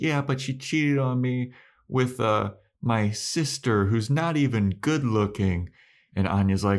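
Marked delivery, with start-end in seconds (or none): 0.0-5.7 high, weepy voice crying through tears. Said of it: "And she's like".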